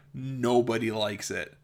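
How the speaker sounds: ordinary delivery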